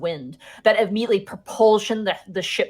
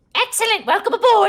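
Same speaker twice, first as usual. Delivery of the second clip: very high, loud, raised goblin voice; 6 dB louder than usual. Voicing a goblin on the ship to the players: goblin voice. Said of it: "the goblin kinda goes".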